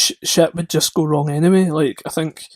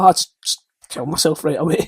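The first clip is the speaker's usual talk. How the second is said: ordinary talk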